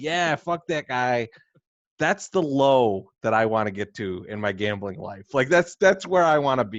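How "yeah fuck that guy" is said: lightly jeering tone. Imagining betting on cooking shows, pretend screaming at the tv. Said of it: "screaming at the T V".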